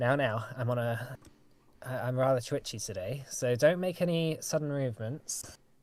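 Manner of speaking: usual speaking voice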